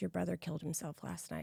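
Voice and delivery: play-acted, soft, plain, businesslike matter-of-fact tone. Retelling how the mother said it the next morning: matter-of-fact tone. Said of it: "very matter-of-factly says".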